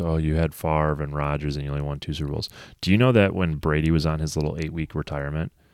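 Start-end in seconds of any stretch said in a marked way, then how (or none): none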